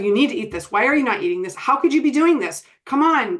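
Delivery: mock, pushy, demanding, hard-pressing badgering tone. Acting out how a parent pushes a child to eat: imitating a parent's pressuring tone. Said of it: "that tone like we talked about earlier".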